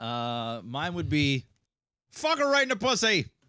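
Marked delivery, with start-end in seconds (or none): 2.1-3.2 heroic shout, much higher and louder. Asked to demonstrate a superhero catchphrase, a guest gives one: superhero catchphrase shout. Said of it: "And please demonstrate".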